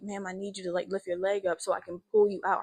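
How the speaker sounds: acted near-tearful voice, fighting back tears. Recounting an emergency, retelling pleading with a grandma; retelling a near-tearful plea. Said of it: "I'm trying not to cry".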